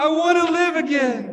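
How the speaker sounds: very high, hollering cry. Retelling the end of a movie, acting out the man on the bridge: imitating someone hollering. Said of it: "he's hollering out".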